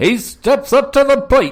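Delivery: put-on very high, loud old-timey baseball announcer voice. Asked to perform, doing a line: baseball announcer voice. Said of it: "do like a baseball announcer".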